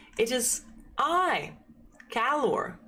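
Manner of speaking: warm, very slow delivery. A glowing figure approaches campers across a lake, speaking as Calor in a warm, booming voice. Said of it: "says the figure in a warm, booming voice".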